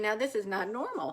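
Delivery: ordinary delivery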